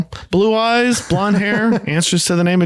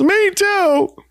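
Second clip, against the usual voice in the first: very high, shrill, exasperated, fed-up shout; 13 semitones higher than usual. Retelling how Jan, who can't take it anymore, finally shouts; retelling a shout.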